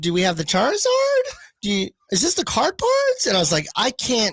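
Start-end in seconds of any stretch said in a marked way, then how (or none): 0.0-3.3 rising uptalk at the end of every line. Describing a girl they used to date, imitating rising uptalk. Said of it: "Everything would always go up".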